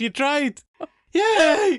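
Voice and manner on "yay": mock very high, loud "yay", hiccup halfway. Teasing the other speaker by copying their cheer: imitating a hiccuped yay. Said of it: "I don't think you could do that yay again".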